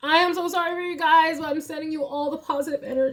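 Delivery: very high, tearful voice, crying through words. Empathizing with their audience, the speaker talks while crying. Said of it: "I can't believe I'm crying".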